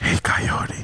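put-on whisper. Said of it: "'Cause he whispers to him".

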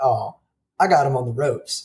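ordinary delivery

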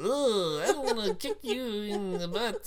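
squeaky, very high, slow, drawn-out clown voice. Voicing an ugly fighting-game character made to look like a clown: really high-pitched voice. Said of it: "a really high-pitched voice".

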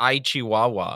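put-on cringe Spanish accent. Quoting the villain's last line when he gets killed: Dream Snatcher's cringe Spanish accent. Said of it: "the last voice line when he gets killed is".

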